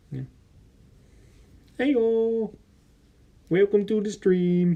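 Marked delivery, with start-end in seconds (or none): 1.8-4.8 not-so-good put-on frog puppet impression. Showing off a Kermit puppet to the chat: Kermit the Frog voice. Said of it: "I don't think I do that good of a Kermit impression".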